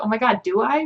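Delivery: mock panicked, tearful, through sobs. Retelling answering an officer's question about weapons, imitating own crying. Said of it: "And I was, like, crying".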